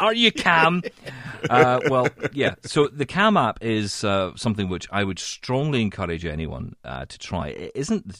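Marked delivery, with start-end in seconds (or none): 0.0-0.8 very high, loud, angry Scottish accent. Asking the listener if they're calm, in an angry Scottish accent. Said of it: "I say it in an angry Scottish voice".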